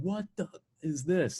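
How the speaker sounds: high, panicked, freaked-out yelled scream, acted. Retelling riding a roller coaster: imitating own scream. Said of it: "I just screamed".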